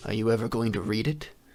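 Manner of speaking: deep, low, rolling rumbling voice. Game narrator voicing a male figure addressing the player: deep rumbling voice. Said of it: "in like a deep rumbling voice".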